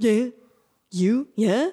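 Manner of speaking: put-on pet dog voice. Showing the voice found for the dog Dexter: Dexter's dog voice. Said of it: "He just is like".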